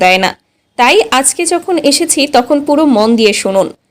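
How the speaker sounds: normal talking voice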